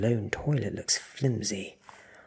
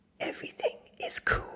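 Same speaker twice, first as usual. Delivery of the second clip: soft, hushed, soothing whisper. First-person narrator speaks to a suspicious man outside, in a whisper. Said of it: "I whisper".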